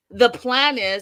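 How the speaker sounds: big, loud, booming announcer voice. Retelling what he said about the plan, with bass in voice. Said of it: "he said it with bass in his voice".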